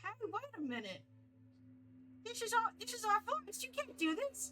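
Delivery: very high, squeaky creature voice, big pitch swoops. Voicing the quicklings after an arrow is shot at them: quickling voice. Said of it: "you shoot the quickling and they go".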